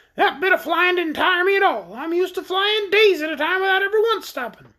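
creature voice, very high, shrill and scornful. Narrating, the orc scoffs at Trot's idea that he needs rest; shrill scornful orc voice. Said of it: "cried the orc as scornfully as his shrill voice would allow".

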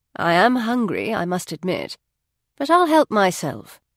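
ordinary delivery

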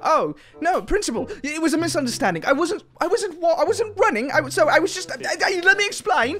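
put-on British accent. Pleading with the principal to excuse running: put-on British accent. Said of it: "if I talked in a British accent".

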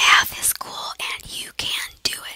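slow, drawn-out, hushed whisper, barely voiced. Speaker working through math problems: whispering.

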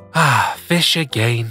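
said with a sigh. A bear finds fish for dinner yet again, sighing. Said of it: "sighed Brown Bear".

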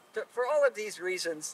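ordinary talk

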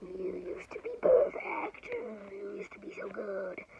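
put-on spooky voice, low, creaky and swooping. Retelling a Batman scene, the speaker quotes a line in a put-on scary voice. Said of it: "in a scary voice".

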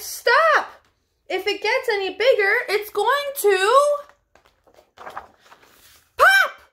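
calling, crying out, pitched very high. Narrator reading the others calling to him as he blows up a balloon, crying out. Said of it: "till the others cried".

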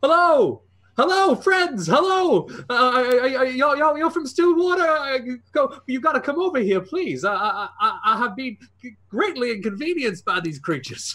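shouting. A man behind bars calls out to people from Stillwater, yelling. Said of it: "and starts yelling".

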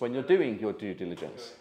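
stress on "doing" with a falling end.

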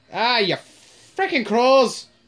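fake Irish accent, slow, high and drawn out. Cursing at crows while shooting zombies: put-on Irish accent. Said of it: "It's good being able to do an Irish accent".

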